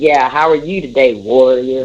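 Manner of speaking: heavily sarcastic delivery. Retelling how the son greets the speaker: imitating a sarcastic greeting. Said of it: "he says it's so sarcastic".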